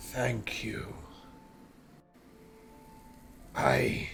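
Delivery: monster voice rumbling out halting, broken words. Voicing a freed creature thanking the players: rumbling in broken Common. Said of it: "the creature rumbles out in very broken common".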